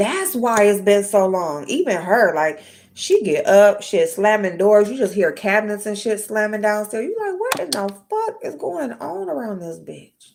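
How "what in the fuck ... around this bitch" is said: put-on croaky, rough, swooping, fed-up angry outburst. Retelling the noise of slamming cabinets downstairs: imitating waking up mad. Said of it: "You just wake up mad".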